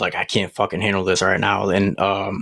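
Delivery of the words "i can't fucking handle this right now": ordinary talk, nothing marked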